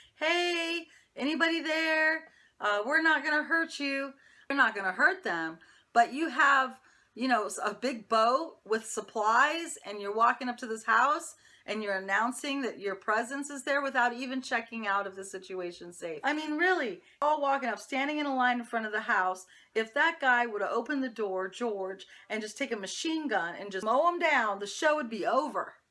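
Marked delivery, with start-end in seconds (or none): 0.2-4.1 high-pitched loud holler. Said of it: "he starts hollering".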